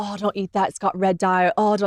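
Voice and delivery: put-on British accent. Speaker quotes a British man who is being nicer to her, put-on British accent. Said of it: "That's why I'm doing the accent".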